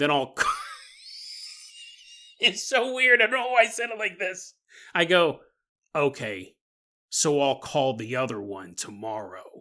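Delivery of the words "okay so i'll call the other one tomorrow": play-acted menacing, very low, slow, drawn-out voice. Retelling hanging up a phone call, retelling an ominous, threatening tone. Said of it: "Sound like a threat".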